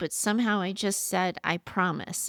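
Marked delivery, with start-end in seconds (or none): none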